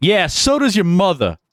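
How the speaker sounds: put-on heavy New York accent. Retelling a stranger's comeback to a heckler at a ballgame, in the thickest New York accent. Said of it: "you hear in the deepest New York accent".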